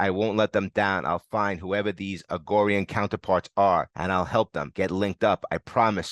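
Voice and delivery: ordinary talk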